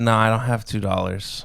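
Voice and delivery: ordinary talk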